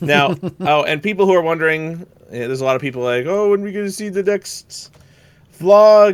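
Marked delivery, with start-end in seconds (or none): 3.3-6.1 dopey, dim-witted, high, loud voice. Quoting people who keep asking a question, in a dumb person voice. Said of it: "using your dumb person voice".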